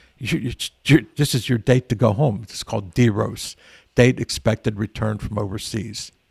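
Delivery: ordinary talk, nothing marked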